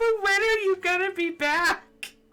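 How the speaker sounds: high, plaintive pleading rising tone.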